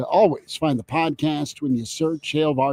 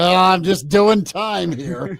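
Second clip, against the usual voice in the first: mock glum, slow, down-in-the-dumps voice; 4 semitones higher, 4 dB louder than usual. Mocking a co-host's answer: imitating an unhappy tone. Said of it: "Sound a little more happy about".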